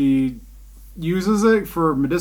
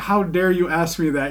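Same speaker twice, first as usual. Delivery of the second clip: normal talking voice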